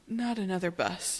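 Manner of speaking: guarded, cautious voice. Recapping a story scene, a character speaks warily. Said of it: "And warily he goes".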